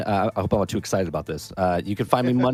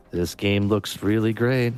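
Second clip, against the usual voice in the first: dead-level, toneless monotone with no pitch lift. Told they're overhyping a game, the speaker shows the alternative: monotone. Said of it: "Do you want me to talk monotone".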